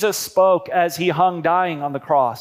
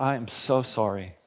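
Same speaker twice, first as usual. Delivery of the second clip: low, very slow, heartfelt remorseful delivery; 7 semitones lower, 9 dB quieter than usual. Showing how tone changes meaning, the speaker says an apology, genuinely remorseful. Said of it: "with genuine remorse in your voice".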